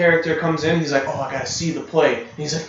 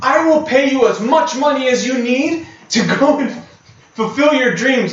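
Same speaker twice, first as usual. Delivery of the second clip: loud, high-pitched yelling; 9 semitones higher, 6 dB louder than usual. Retelling a scene where a character yells at her: imitating a character yelling. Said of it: "he's literally yelling at her".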